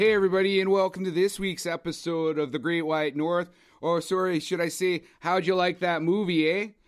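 over-the-top Canadian hoser accent, laid on. Podcast host opening an episode about Strange Brew, exaggerated Canadian accent. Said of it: "do that accent the whole movie".

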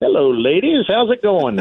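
casual, high deer voice. Retelling a hunt, voicing the buck that stepped out: voicing the buck deer. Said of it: "he came out just as pretty as you please, broadside, like".

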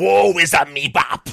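very loud, slow, stretched-out high wail. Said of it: "that's my [name] impression right there".

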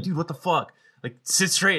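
high, screamed outburst, acted. Speaker retelling how he screamed at them in class, retelling a scream. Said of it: "he was like screaming".

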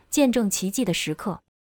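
ordinary delivery

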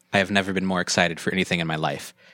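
utterly bored, dry, low deadpan delivery. Showing how to sound bored though excited: deadpan Wes Anderson style. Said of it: "that totally sounded Wes Anderson".

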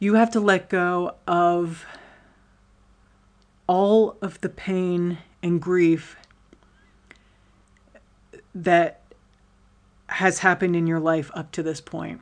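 choked-up voice catching with emotion. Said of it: "I didn't mean to get choked up right there".

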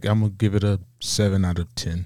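low, dull, flat, one-note monotone. Describing a man who rates food from one to ten, the speaker imitates him: monotone. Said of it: "He has a very monotone speech".

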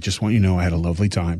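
put-on overly nice voice. Retelling what a guy said after an argument once she left, in a mock-sweet voice. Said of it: "in the nicest voice ever".

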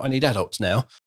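put-on sarcastic tone. Voicing a mum who had to give up work: sarcastic tone. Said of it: "saying it in this sar-, sarcastic tone".

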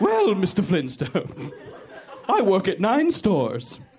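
zany, crazy cartoon voice with swooping pitch. Imitating the guy who works everywhere in the Flintstones: Flintstones cartoon voice. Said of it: "you're doing the crazy voice of the guy who works everywhere in the Flintstones".

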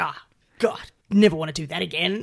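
put-on coarse, rough Australian bogan accent. Retelling a woman's phone call to her mum afterward, in a rough bogan voice. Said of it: "In her rough as guts, Bogan voice".

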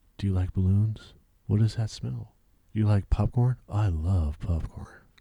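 soft, quiet, gentle, unadorned normal voice. Showing how to deliver the line with nothing behind it, soft normal voice. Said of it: "Just a soft fucking normal voice".

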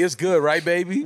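soothing, tender, doting, coaxing auntie voice. Imagining a co-host coaching someone: imitating Damaris talking like an auntie. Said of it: "Damaris talking like an auntie".

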